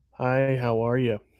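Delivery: level, toneless, flat monotone. Describing how a guy with a creepy face talked: imitating a monotone greeting. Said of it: "It was like monotone".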